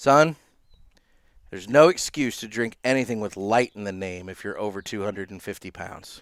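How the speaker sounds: very quiet, hushed, confidential aside. Retelling what a catcher told him at a golf tournament: imitating someone speaking very quietly. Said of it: "he says very quietly".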